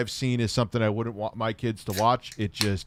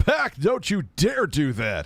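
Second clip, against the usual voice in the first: very slow, drawn-out, swooping cartoon voice; 5 semitones higher, 3 dB louder than usual. Reacting to a kids' cartoon, mimicking the cartoon's voice acting. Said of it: "Ten out of ten of voice acting here".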